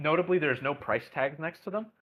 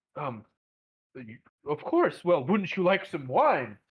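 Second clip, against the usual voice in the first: clearly confused, befuddled, fumbling, hesitant tone. Playing a stall keeper just bumped into by a couple on a date; befuddled. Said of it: "clearly befuddled".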